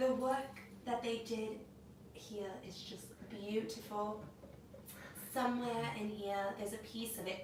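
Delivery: put-on soft, quiet British accent. Act out what she said about her wedding with Harry, as Meghan Markle in a British accent. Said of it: "I'm gonna say this in a regular accent".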